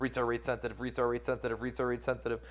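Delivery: tongue twister said very fast, words run together.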